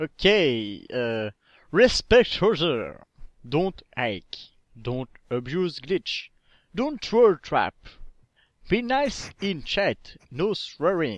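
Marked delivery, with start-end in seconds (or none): 1.7-11.2 put-on accent from England. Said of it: "avec ton accent anglais".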